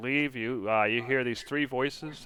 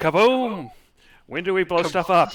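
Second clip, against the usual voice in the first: gleeful, very loud, high excited yell; 6 semitones higher, 9 dB louder than usual. Voicing a voice heard inside a character's head: excited voice in the head. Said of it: "one of the voices is like".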